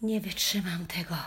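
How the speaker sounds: low muttering, mumbling. Narrator reads Henryk's line as the dog refuses to move: muttered to himself. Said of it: "mruknął do siebie".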